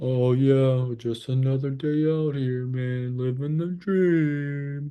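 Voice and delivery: slow, sluggish, low-energy, even, listless drawl. Showing what a sluggish, slow state sounds like, sluggish and slow. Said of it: "your state is being very sluggish and slow".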